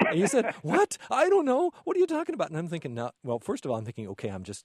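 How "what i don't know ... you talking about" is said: acted panicky, very high-pitched, freaked-out outburst. Recounting someone's reaction to a joking math question, retelling a freaked-out reply. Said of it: "he freaked out".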